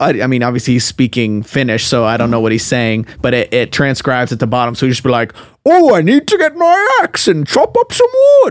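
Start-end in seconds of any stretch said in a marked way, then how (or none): 5.6-8.5 loud, very high, swooping backwoods mountain-man voice. Retelling a game's character talking to himself: imitating a loud Finnish mountain man. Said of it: "he sounds like that".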